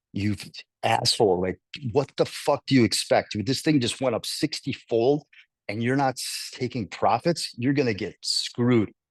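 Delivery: ordinary delivery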